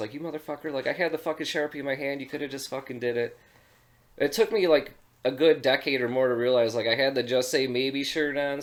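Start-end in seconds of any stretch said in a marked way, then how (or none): 0.1-3.4 fed-up, annoyed, pissed-off griping rant. Retelling being refused an autograph, imitating own pissed-off past self. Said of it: "kinda pissed for years".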